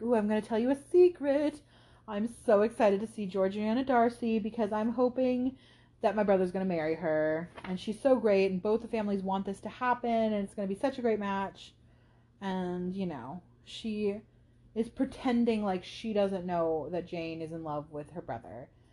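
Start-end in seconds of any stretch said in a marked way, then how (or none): 0.0-11.7 put-on two-faced, effusive, backhanded gushing voice. Acting out a letter that shares a secret about a brother's hoped-for match: backhanded gushing as Caroline Bingley. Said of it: "this backhanded".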